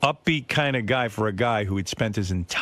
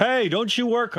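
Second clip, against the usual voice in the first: very high, jokey, teasing yell; 12 semitones higher than usual. Retelling shouting at a woman ahead who doesn't hear him: retelling a teasing yell. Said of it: "I yell out to her".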